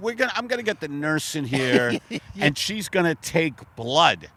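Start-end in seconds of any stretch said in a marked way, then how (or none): none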